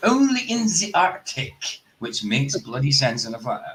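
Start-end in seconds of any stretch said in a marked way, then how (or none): 0.0-1.8 high, slow mock South African accent. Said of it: "South African".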